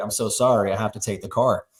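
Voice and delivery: imitated soft, gentle apologetic voice. Retelling how a big tow truck driver softly apologized: imitating a soft apologetic voice. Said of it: "he just turned to, like, this puppy dog, like a soft bear".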